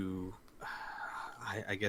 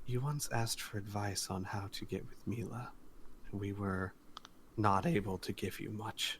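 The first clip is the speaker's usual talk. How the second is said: quiet, confidential, close-range private murmur; 6 dB quieter than usual. He comes in close, asked to prove who he is; quiet voice. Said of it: "says in a quiet voice".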